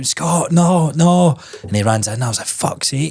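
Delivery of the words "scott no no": mock, high-pitched yelled shout. Recalling shouting after someone as he runs in, retelling a shout. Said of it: "and I'm shouting".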